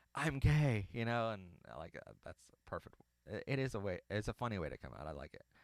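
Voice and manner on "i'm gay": acted-out high, loud, blurted screamed outburst. Retelling how a character came out to family in church: imitating Kenny screaming. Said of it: "Kenny screams".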